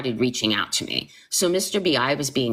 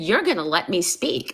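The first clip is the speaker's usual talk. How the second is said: mock insistent, firm, commanding tone; 3 semitones higher than usual. Retelling a phone call where she yelled at the speaker: retelling saying it loudly. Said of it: "And I said it so loud".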